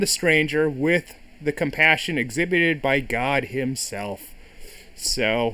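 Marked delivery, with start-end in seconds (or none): none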